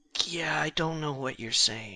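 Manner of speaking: whispering as quietly as possible. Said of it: "whisper to him as quietly as I possibly can".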